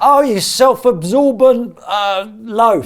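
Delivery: loud abusive shouting. Asked by a co-host to shout something at Fun Sponge, shouting abuse. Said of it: "shout something at Fun Sponge".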